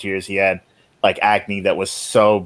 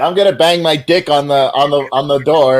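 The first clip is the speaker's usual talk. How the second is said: put-on drunken yell, higher and louder; 7 semitones higher, 6 dB louder than usual. Retelling a book scene of a drunk man in a dorm: imitating someone yelling drunk. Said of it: "he yells".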